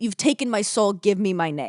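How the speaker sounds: mock panicked freaking-out outburst. Retelling a character's outburst about his name: imitating someone freaking out. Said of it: "he's basically freaking out, being like".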